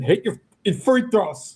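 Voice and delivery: mock screaming, high-pitched and loud. Describing free throws in the sports book, imitating Kevin screaming. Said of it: "Kevin literally is just screaming".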